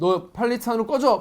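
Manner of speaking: loud, high-pitched, hostile taunting tone.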